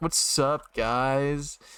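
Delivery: put-on casual, nonchalant tone. Acting out walking into the office: acting nonchalant. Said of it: "all nonchalant".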